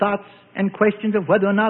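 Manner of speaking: plain reading voice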